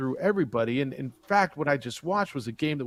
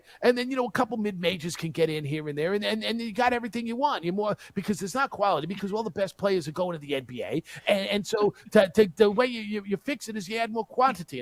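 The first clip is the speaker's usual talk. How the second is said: put-on East Coast accent, much higher; 6 semitones higher than usual. Quoting what a man was saying, in an East Coast accent impression. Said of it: "I love your impression of the East Coast accent".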